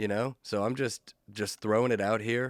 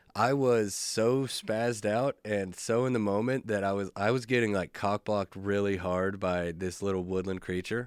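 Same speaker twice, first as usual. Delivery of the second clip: ordinary talk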